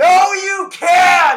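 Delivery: shrieking all-out yell, very high and very loud. At his computer screen, reacting to what Wolverine says: yelled loudly. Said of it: "I'm gonna say it loudly away from the mic".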